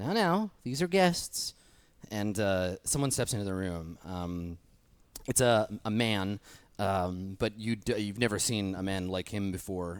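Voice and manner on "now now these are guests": very high, thin, piping voice. Voicing a horned robed figure calling the prisoners guests: much higher pitched voice. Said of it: "much higher pitched".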